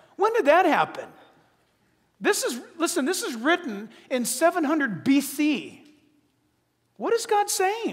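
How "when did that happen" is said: gently, lovingly sarcastic, higher pitch. Asking listeners about the verse just read: lovingly sarcastic. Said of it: "I want to be a little lovingly sarcastic to you right now".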